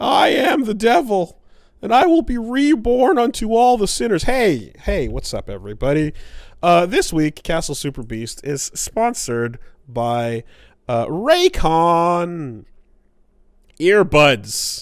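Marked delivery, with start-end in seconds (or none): 0.0-4.2 put-on very high, crackly, voice-cracking teenage devil voice. Doing a devil bit for the other speaker: crackly teenage-voiced devil. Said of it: "crackly, teenage voiced [name] th-, just did in his devil bit".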